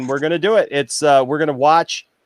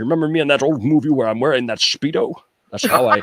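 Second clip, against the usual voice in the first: put-on Scottish accent, lower; 4 semitones lower than usual. Retelling phone calls wooing someone in a Sean Connery impersonation. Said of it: "my Sean Connery impersonation".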